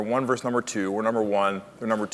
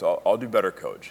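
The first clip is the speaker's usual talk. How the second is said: ordinary talk, nothing marked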